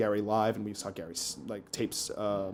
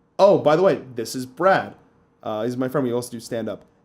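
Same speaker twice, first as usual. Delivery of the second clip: ordinary delivery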